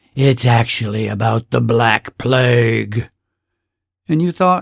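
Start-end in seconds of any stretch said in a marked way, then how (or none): 0.2-3.1 put-on spooky horror movie whisper. Retelling how someone revealed a spooky secret: horror movie whisper. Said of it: "Someone whispered in their best horror movie voice".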